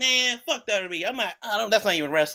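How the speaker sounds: angry, disrespectful, dismissive ranting tone. Acting out how a wrestling fan might dismiss WWE: imitating a disrespectful rant. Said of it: "You sound mad disrespectful".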